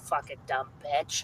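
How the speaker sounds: hushed, whispered mutter under the breath. Retelling a parent's comment during a movie: imitating a muttered remark. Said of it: "here's my dad under his breath".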